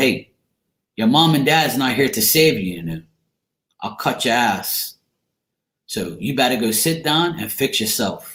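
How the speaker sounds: ordinary talk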